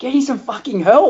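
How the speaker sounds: put-on, high-pitched shouting. Speaker recounts watching it hours later, retelling yelling at the TV. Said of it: "just yelling at the TV going".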